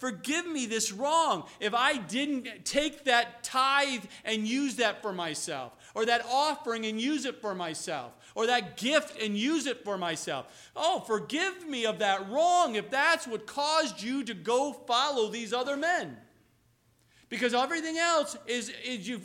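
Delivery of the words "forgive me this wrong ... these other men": usual speaking voice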